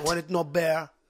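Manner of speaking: put-on Jamaican patois accent. Mid-conversation, one speaker suddenly answers in a Jamaican patois accent. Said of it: "why are you Jamaican now?".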